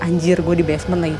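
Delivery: plain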